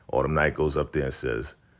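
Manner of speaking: normal talking voice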